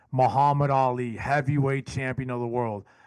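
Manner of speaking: normal talking voice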